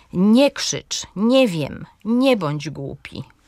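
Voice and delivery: stress on NIE, following verb unstressed.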